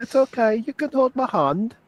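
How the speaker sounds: very high-pitched put-on English accent. Repeating a line from the show being watched, British accent. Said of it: "you do a better British accent".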